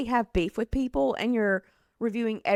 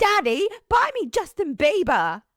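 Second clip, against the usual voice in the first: high-pitched, loud, spoiled-brat whine; 8 semitones higher, 6 dB louder than usual. Comparing someone to Willy Wonka's rich girl: Veruca impression. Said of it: "That's what Hailey Bieber gives to me, is like".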